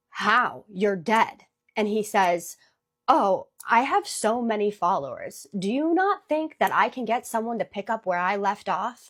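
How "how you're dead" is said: mock-shaky trembling voice, slower. Retelling a woman's reply to a threat of revenge: imitating a shaky voice. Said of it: "So in a shaky voice".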